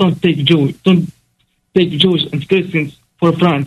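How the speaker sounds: ordinary talk, nothing marked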